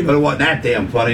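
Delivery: normal talking voice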